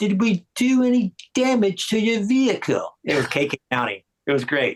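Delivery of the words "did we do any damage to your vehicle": put-on slow, classic British accent. Retelling asking for an autograph as the car window rolls down: K.K. Downing British voice. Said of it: "classic British voice".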